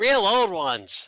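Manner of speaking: put-on high, loud kid voice.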